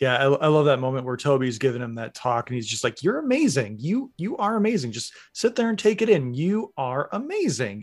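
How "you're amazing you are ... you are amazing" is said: goofy, earnest, high, swooping sing-song voice. Recalling the moment Tobey Maguire gives Andrew Garfield a talk: funny voice quoting Tobey Maguire. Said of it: "I know I'm using like a funny voice".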